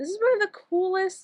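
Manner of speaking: voice cracking upward mid-phrase. Showing off a rug they carved, the speaker's voice cracks: voice cracking. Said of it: "my voice just cracked".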